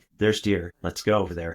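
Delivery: ordinary delivery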